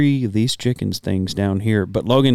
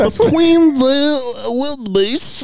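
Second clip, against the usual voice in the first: put-on old-fashioned 1920s-style British accent, much higher pitch; 3 dB louder than usual. Speakers trading cartoon voice impressions; he does his Nigel Thornberry impression. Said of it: "the 1920s African safari British accent".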